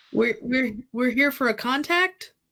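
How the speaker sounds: cheery, eager character voice. Playing a character greeting a table while looking for a contact: upbeat in character. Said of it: "Hazel and Clash are just so upbeat".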